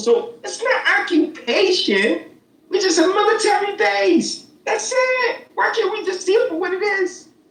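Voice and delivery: very high-pitched, squeaky voice. Arguing about occupation and a military base, high-pitched voice. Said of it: "use that high pitched voice?".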